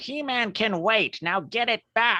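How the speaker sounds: very high-pitched skeleton villain voice, pitch way up. Recounting a scene, the speaker gives the villain's order in a Skeletor voice. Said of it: "that's my best Skeletor".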